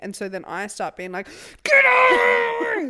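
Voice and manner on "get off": shrill, very loud angry yell, "off" stretched. Retelling telling the dog to get off: imitating own angry yell. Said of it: "I get really angry".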